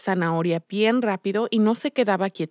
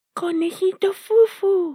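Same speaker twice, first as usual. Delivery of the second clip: put-on, very high fairy voice; 11 semitones higher than usual. A character calls out to Fufu the bunny in a fairy voice. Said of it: "dijo con voz de hada".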